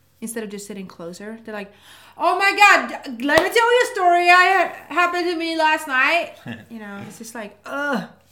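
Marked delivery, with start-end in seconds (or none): 2.2-6.4 very loud, over-projected, drawn-out yelling. Complaining about other podcasts, mimicking how their hosts yell. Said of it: "when you feel like they're yelling".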